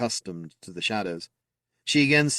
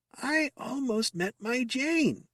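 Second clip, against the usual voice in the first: very high, very slow creaking squeak, drawn out; 4 dB quieter than usual. Reading a story aloud, voicing Squeaker's remembered words: creaky, squeaky voice. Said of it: "in his creaky, squeaky voice".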